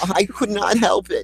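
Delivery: mock mournful, grieving tone. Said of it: "the thing that they say at the end of your life".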